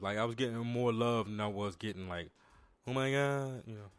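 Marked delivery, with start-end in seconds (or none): 2.9-3.8 put-on woman's voice.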